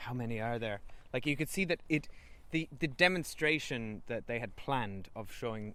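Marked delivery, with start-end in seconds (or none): 0.0-0.8 acted whisper, quieter. Recapping a scene with a dragon, retelling a character's question as a whisper. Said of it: "he sort of whispered like".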